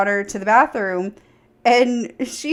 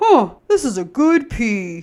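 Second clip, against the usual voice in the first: slow, dropped into a deeper voice. Retelling how she acted like boys: lowered deep voice. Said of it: "she lowers her voice".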